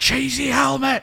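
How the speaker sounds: screeching, shrill, very loud, hoarse all-out yell. Recalling a school game played until someone got told off, retelling a shout. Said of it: "it got to the point where you're going".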